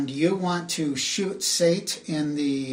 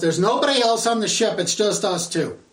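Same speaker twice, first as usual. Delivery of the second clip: loud, high, raised pleading yell; 5 semitones higher, 6 dB louder than usual. Voicing a character who yells after his commander is shot: character Sate yelling. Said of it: "it's Sate who yells".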